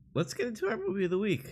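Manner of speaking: voice breaking and cracking, very high-pitched. Moving on to the movie of the week, the host's voice cracks. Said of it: "And my voice just cracked".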